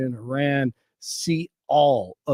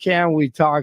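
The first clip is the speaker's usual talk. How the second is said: ordinary talk, nothing marked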